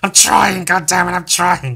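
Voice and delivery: put-on voice pushed down into a growl. Speaker admits slipping into silly voices all the time, demonstrating one: growly voice. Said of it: "With this growly voice".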